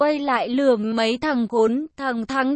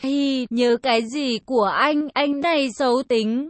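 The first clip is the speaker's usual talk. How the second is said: ordinary delivery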